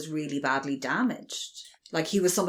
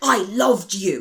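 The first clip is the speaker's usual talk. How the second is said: angry, forceful, hostile, raised delivery; 4 semitones higher, 7 dB louder than usual. Describing how a character declares his love, mock-aggressive. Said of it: "so aggressive the way he says it".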